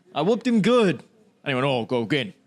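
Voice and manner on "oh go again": put-on low, deep, grown-up-sounding older kid voice. Retelling how the beaten kid demanded another game: imitating a deep-voiced older kid. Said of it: "'Cause he had puberty very early".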